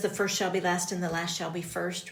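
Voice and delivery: ordinary talk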